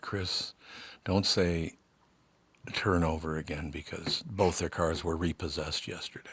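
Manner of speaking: playful, joking, half-whispered stage whisper. Joking aside to a co-host named Chris: joking stage whisper. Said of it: "I gotta whisper to Chris here".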